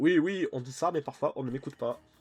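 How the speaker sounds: loud, high put-on German accent over French. Playing through a game and voicing a character in a German accent. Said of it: "je lui fais un accent allemand".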